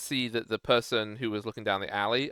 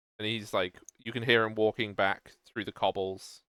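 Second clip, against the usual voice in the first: ordinary talk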